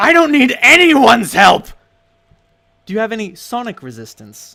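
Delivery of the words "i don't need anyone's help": very loud, shrill screeching outburst. Narrating a character's bizarre temper flare: screeching. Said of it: "she screeches".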